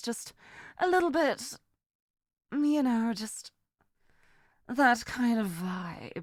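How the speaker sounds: menacing, sinister, villainous femme fatale voice. Talking about wanting a villain voice-acting role, in a sinister voice. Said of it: "I really love doing this kind of sinister voice".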